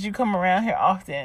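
normal talking voice

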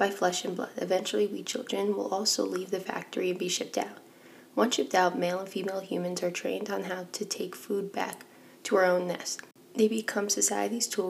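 ordinary talk

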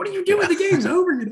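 very loud, very high, shrill screaming. Retelling yelling at a team while holding a bet on them: retelling a scream. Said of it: "I'm screaming at the team".

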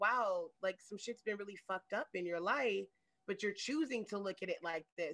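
ordinary talk

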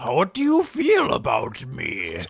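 swooping, talking rock creature voice. Pretending to be the state of Minnesota, NeverEnding Story rock guy voice. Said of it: "You're talking like that rock guy from Neverending Story 2".

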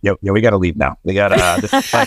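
muttering under the breath. Retelling how Jim urged leaving an awkward scene: imitating Jim muttering under his breath. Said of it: "under his breath".

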